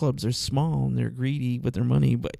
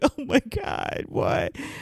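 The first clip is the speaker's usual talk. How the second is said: mock tearful words coming through crying; 12 semitones higher than usual. Retelling hearing a friend's cancer news: retelling own crying. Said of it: "I start crying".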